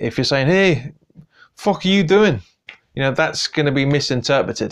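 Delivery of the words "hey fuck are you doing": put-on thick Glasgow Scottish accent, pitched up. Imitating what a footballer might have said to doping officials: imitating Snodgrass's strong Scots accent. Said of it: "his strong Scots accent".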